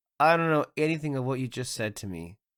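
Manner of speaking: usual speaking voice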